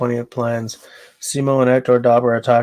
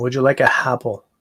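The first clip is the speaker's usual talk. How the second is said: put-on French Canadian English accent. Explaining how a community drops its H sounds, demonstrating: French Canadian accent. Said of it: "a French Canadian accent".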